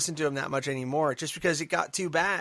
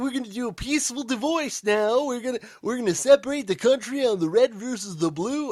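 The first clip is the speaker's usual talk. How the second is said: put-on purple dinosaur character voice; 7 semitones higher than usual. Speaker voices an imagined proposal, Barney the Dinosaur voice. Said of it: "I'm doing a voice like Barney the Purple Dinosaur".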